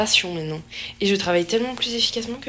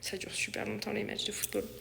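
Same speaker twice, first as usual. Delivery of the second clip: soft, hushed whisper. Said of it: "il faut que je parle plus doucement".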